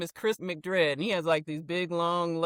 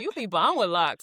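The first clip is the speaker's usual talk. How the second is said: tiny, little way of talking; 3 dB louder than usual. Quoting a former student's compliment: Lenitra's little voice. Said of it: "That's kinda how she talks a little bit".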